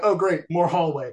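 ordinary talk

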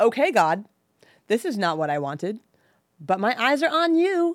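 put-on sulky, snarky kid tone. Retelling your complaint to God, in a put-on snarky, upset child voice. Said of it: "like in a snarky, upset child sort of voice".

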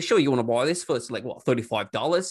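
put-on Australian character accent. Retelling selling didgeridoos while in character: retelling own put-on australian character. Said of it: "I'm in character".

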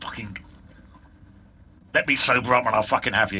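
muttering swearing under breath. Voicing a tied-up captive swearing at the party: swearing curses under his breath. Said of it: "is just swearing curses under his breath".

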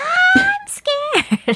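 very high, swooping yell. Quoting a movie character's line in a drinking game: imitating a movie character yelling. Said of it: "I'm gonna yell for no reason".

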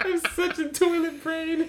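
very high-pitched speech broken by giggling laughter. Still amused by an earlier crude joke, laughing while talking. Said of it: "Just even talking about it makes me laugh".

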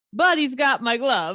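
put-on Italian accent. Saying a running joke phrase to an old acquaintance, in an Italian accent. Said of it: "in an italian accent".

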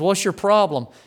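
yelling. Retelling how a man from the congregation confronted the preacher: imitating someone yelling. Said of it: "He's yelling at the preacher".

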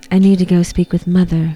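put-on too-calm monotone voice. Discussing a monotone narration, the speaker quotes Norman Bates, calm Norman Bates impression. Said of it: "Too calm. Too calm".

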